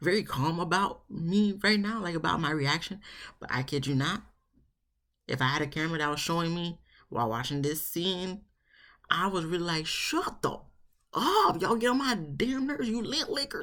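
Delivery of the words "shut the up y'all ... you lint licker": acted exasperated outburst, pitched very high. Retelling own reaction while watching the scene: imitating own fed-up outburst. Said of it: "I really was over it".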